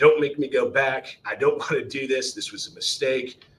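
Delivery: put-on pleading tone through bawling, sobbing tears. Recalling begging their mom not to send them back as a young Marine: imitating tearful begging. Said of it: "bawling my eyes out and begging my mom".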